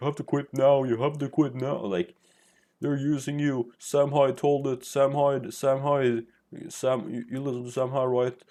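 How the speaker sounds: desperate mock screaming through sweat and tears. Retelling how the guy who told him to quit screamed at him, mock tearful screaming. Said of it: "screaming with a bunch of sweat and tears".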